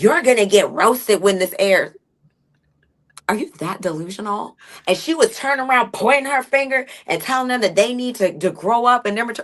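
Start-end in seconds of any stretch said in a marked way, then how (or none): 0.0-2.0 put-on defensive tone, higher. Retelling a cast member's retort at the voting: imitating someone getting defensive. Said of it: "she's getting all defensive".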